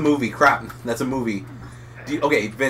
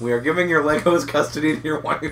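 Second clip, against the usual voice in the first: normal talking voice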